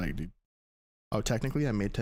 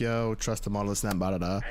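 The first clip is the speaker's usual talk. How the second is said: usual speaking voice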